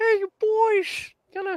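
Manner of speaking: put-on very high, leering, creepy old-man voice, calling out. Friends naming a cartoon character; one speaker does a Herbert from Family Guy voice. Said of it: "It was the old man from freaking".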